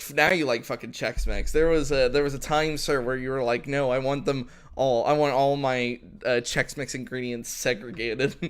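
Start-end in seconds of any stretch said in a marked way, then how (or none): none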